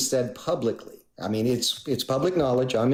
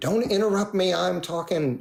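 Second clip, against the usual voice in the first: mock angry delivery, pitched up higher; 6 semitones higher than usual. Retelling a phone call where the other person got angry: imitating an angry retort. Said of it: "she got angry".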